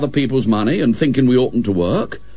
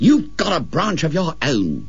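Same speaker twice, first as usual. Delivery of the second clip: fiercely spoken, pitched-up, fierce delivery; 5 semitones higher than usual. Robert answers William, who asks why he can't come, fiercely. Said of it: "said Robert fiercely".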